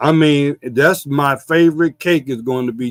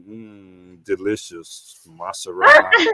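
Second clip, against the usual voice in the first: low, sultry, seductive put-on voice, drawn-out mm; 6 semitones lower than usual. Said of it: "you sound so sexy if you say Maserati".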